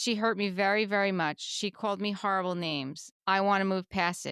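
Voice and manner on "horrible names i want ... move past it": normal talking voice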